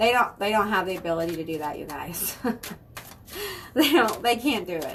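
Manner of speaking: speech broken up by laughter. Talking to viewers about people who claim to cast hexes, laughing while talking. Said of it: "I'm sorry I'm laughing".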